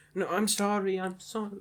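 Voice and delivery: slow, frightened, cowering, shivering, pleading voice. Imitating a shivering player apologizing after being berated: imitating a frightened apology. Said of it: "he was shivering".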